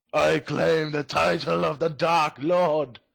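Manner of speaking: high-pitched character scream. Role-playing, pushing another character off a ledge, in-character scream. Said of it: "push him off the ledge and scream".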